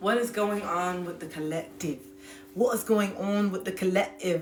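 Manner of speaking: sudden British English accent, out of nowhere. Asking what is going on with the collective: sudden british accent. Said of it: "why did all of a sudden that accent come up".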